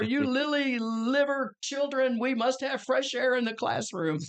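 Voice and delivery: loud scolding holler in an Irish brogue. Retelling how an Irish nun scolded the children: imitating a nun hollering. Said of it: "the nun would holler".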